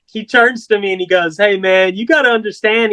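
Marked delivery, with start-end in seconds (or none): none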